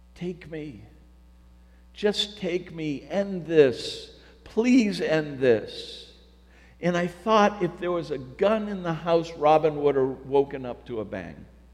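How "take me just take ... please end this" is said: slow, desperate, mock pleading and begging. Recalling praying to god, repeating the prayer: acting out past begging. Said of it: "just begging God".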